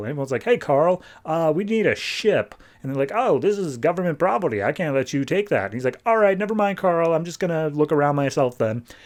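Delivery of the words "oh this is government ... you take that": very computerish robot tone. Retelling a show's scene, speaking as the little dude Carl: Carl's computerish voice. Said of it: "he speaks with a very computerish voice".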